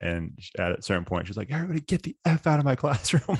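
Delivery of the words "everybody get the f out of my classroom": mock, very high, tearful crying outburst. Retelling a professor's outburst at a disrespectful class: imitating a crying professor yelling. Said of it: "she was crying".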